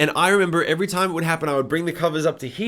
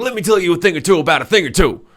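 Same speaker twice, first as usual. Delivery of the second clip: put-on pushy, domineering, aggressive old man's voice, raised; 6 dB louder than usual. Retelling a recurring childhood vision of a ghostly old man: imitating an aggressive old man. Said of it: "come and talk to me and be like".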